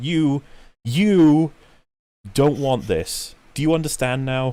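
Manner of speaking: high, patronizing, condescending talking-down voice. Describing a man pointing ever closer to his audience's faces, mock-condescending tone. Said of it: "said in a condescending tone".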